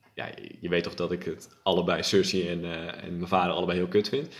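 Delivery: normal talking voice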